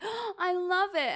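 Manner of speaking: exaggerated fake enthusiasm, overemphasized. Describing reacting to a gift like socks, with exaggerated fake enthusiasm. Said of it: "I tend to overemphasize how much I love it ... it sounds really fake".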